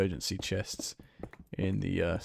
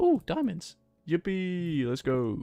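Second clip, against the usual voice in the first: very high, voice-cracking, excited, delighted squeal; 10 semitones higher, 5 dB louder than usual. Finding diamonds while playing, voice cracking with excitement.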